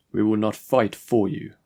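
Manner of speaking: ordinary delivery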